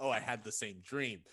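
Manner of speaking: normal talking voice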